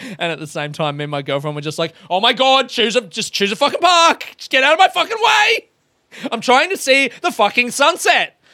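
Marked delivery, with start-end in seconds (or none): 2.1-8.3 very high-pitched, shrill, loud yelling. Retelling yelling at a slow car while rushing to the sunset: retelling yelling at a car. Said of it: "in yelling at a car".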